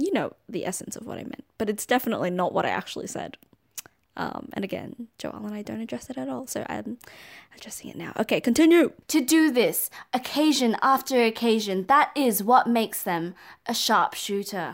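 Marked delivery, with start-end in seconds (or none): 9.1-14.7 steady, slow, measured newsreader voice. A speaker reads a passage aloud; newsreader voice. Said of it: "That's my newsreader voice".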